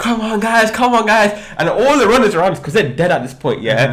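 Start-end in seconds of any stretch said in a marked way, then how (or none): 0.0-1.3 mock rousing cheer-like yell, high-pitched and rallying. Retelling hyping up a running crowd in a tunnel: imitating his own shouting. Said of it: "I would start shouting like".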